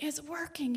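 high, play-acted yelled call. Retelling what he yelled while the speaker turned on the faucet: retelling his yell. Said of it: "and he's yelling".

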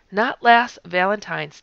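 normal talking voice

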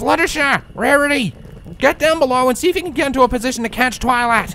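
very high-pitched, strained call. Straining to hold a friend up, she calls to two others: calling out, strained. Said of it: "she called out in a strained voice".

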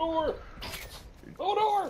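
high-pitched yelling. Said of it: "are you yelling Hodor?".

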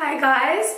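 just-woke-up morning voice. Greeting viewers at the start of a video: morning voice. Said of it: "that's why my voice is like this".

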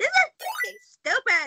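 very high, animated, swooping sing-song woman's voice. Retelling how she reacted to the ID rules: impression of the woman at the DMV. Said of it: "your impression was, like, dead on".

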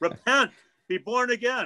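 piercing, very high-pitched yell. Telling how a man yelled into a friend's ear, imitating him yelling. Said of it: "and yelled at my friend".

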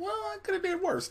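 acted, very high, soft, hushed, offhand and nonchalant. Retelling a character's reply to a complaint about almost being hurt: mock-nonchalant. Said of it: "somebody just nonchalantly goes".

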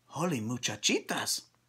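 quiet, very soft voice. A narrator reads a character's exclamation, said in a very soft voice. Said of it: "he said in a muy, muy soft voice".

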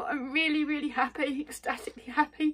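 high-pitched tearful happy crying. Speaker thanking someone who went the extra mile: crying happy tears. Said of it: "I'm crying".

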